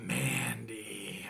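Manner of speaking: seductive creaky murmur, very low and very quiet. Announcing a wrestler's name as a joke, in a put-on sexy voice. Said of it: "That's my sexiest voice".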